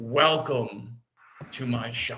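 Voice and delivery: grand, echoing, thunderous voice of looming spirit. Voicing the shop's owner welcoming visitors as they walk in, booming, thunderclap voice. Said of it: "booming, like thunderclap voice".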